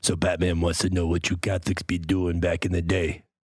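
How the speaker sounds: street-style voice, dropped very low.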